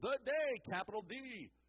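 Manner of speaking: on-air radio host delivery. Stressing a word from the key verse: radio voice. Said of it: "I went to my radio voice there".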